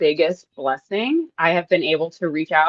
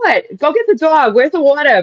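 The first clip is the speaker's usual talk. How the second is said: put-on very high, in-your-face New Jersey Brooklyn accent; 9 semitones higher, 8 dB louder than usual. Imitating her mom answering the phone, in a new jersey brooklyn accent. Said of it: "my New Jersey, Brooklyn kind of accent".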